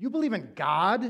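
put-on scornful, contemptuous, disdainful tone. Retelling what a woman said once talk turned to Christ, mock-disdainful. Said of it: "she said it with complete disdain in her voice".

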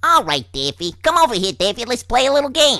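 cartoon rabbit character voice. Giving a little sample of cartoon voices: Bugs Bunny voice. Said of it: "a little bit of Bugs Bunny".

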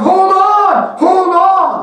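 very high-pitched, very slow, drawn-out yelling. Acting out a hiker calling to a friend hanging from a cliff: yelling in a pretend rescue. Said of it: "you're yelling".

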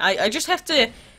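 ordinary talk, nothing marked

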